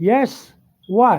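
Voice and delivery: mock loud shout, yelling. Retelling answering a call from another room: imitating own past yell. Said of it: "I yelled back".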